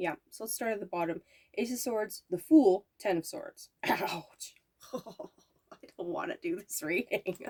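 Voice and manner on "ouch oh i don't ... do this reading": slow, breathy speech through laughter. Reading tarot cards for a listener and drawing a bad card, laughing. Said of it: "Sorry for laughing".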